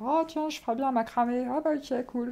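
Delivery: high, teasing, poking-fun mocking put-on voice. Speaker imagines someone choosing a new hobby, in a put-on mocking voice. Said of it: "Je sais pas pourquoi je le dis avec cette voix".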